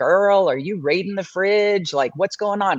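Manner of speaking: playful, jokey, teasing tone. Retelling how the speaker asked about high night blood sugar: imitating own teasing. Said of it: "kind of teasing her".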